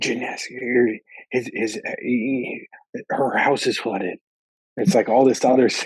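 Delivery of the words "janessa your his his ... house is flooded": slow, hushed, kept-down whisper. Retelling a phone call where a friend whispered urgent questions: imitating Kevin whispering. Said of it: "he's whispering it to me".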